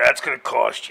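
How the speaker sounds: gruff, rough, creaky bridge-troll voice. Joking about trolls who love tolls, speaking in a put-on troll voice. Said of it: "you did a perfect troll voice".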